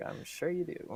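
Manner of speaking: muttered under the breath. Voicing a character as she walks away, muttered under her breath. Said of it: "under her breath".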